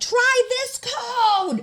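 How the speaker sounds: very high scream with the word code drawn out. Retelling shouting a lock code to an unhelpful TSA agent through glass, retelling screaming through glass. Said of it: "And so I'm screaming into it".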